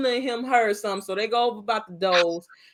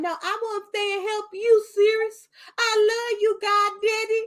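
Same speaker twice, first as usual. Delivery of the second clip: silly voice pitched way up; 12 semitones higher than usual. Retelling a movie scene, playing Harry Potter begging Sirius: imitating Harry Potter. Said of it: "here go Harry Potter".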